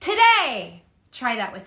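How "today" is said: raised, energetic calling out. Speaker demonstrates for listeners, calling out across the room. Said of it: "calling out across the room like this".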